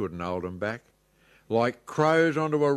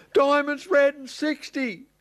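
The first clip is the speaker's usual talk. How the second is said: very high, panicked squeak; 13 semitones higher than usual. In a rhyming story, the president calls the next number, squeaking in panic. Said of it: "squeaked the president in a panic".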